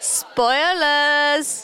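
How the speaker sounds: put-on British accent, words stretched out. Suggesting a way to announce spoilers, put-on British accent. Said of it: "You go British".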